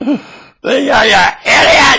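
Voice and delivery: very high, loud, full-on scream. Recounting catching some girls being silly, retelling a scream. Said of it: "I was screaming".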